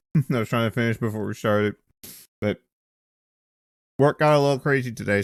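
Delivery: speaking with a mouthful of food. Speaker apologizes to the others; talking with a mouthful of food. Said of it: "I have a mouthful of food".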